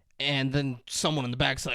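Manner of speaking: normal talking voice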